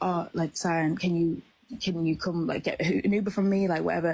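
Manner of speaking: put-on whispering voice. Retelling a friend's phone call at three in the morning: imitating someone whispering. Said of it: "she's, like, whispering".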